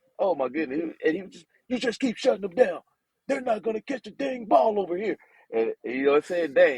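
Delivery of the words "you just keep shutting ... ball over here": strong, raspy, forceful, encouraging coach voice, pitched up. Act out Coach Stoops answering his players, in Coach Stoops's strong, raspy voice. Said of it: "He got this strong, raspy voice".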